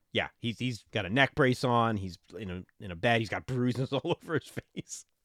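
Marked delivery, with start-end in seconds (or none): 3.2-5.0 words broken up by laughter while talking. Describing a movie character lying injured in bed, laughing while talking. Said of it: "I don't know why I'm laughing".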